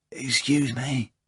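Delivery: soft half-whisper under the breath. Reading a story aloud, a character apologizes while dressing: half-whispering.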